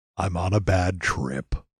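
low, slow, mopey cartoon voice.

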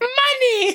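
put-on babyish, very high-pitched baby voice. Quoting a woman who said money, baby voice on money. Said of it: "Is that a baby voice? The way you say it is almost like a baby saying mommy".

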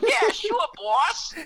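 very high, dragged-out cartoon henchman voice. Retelling how a guy talked, in a cartoon henchman voice. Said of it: "he sounded like a cartoon henchman".

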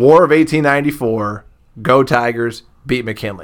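ordinary talk, nothing marked

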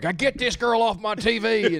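put-on country man voice. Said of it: "That's what I'm good at".

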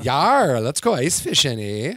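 swooping put-on pirate voice with a Canadian eh. Showing off audition voices to the group, in a pirate voice. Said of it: "a pirate".

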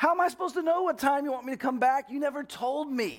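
angry, high-pitched, heated full-on shouting. Retelling an argument with him, acting out yelling at him. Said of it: "i start yelling at him".

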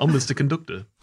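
put-on Liverpool accent. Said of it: "That is a little more [name]".

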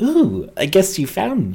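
high, swooping, strange bug-faced elf voice. Voicing an elf clinging to the ceiling who has been discovered: weird-looking elf character voice. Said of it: "a sort of weird-looking elf".

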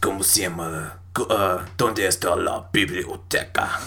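deep, scary voice in Spanish. Joking that anything in Spanish sounds scary, speak in a deep, scary voice. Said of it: "It's fucking scary in Spanish".

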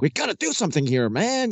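excitable, high swooping voice. Retelling a film scene of a panicking governor: Dan Aykroyd voice. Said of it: "this kind of Dan Aykroyd voice".

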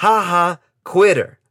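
play-acted, loud, mocking, taunting call. Retelling how a man pointed at him on a busy campus: a loud shout. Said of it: "And in a loud voice".

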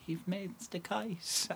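high, soft, tearful voice.

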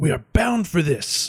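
high voice with a hiss through every word. A game narrator voices Voltenna seizing Martin at night in the jungle, hissed half-whisper. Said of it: "she kind of like hiss whispers at her".

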